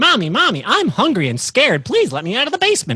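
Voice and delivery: put-on very high, loud, swooping sing-song little-kid voice. Acting out a friend's six-year-old son in a comedy bit. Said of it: "my six-year-old son was like".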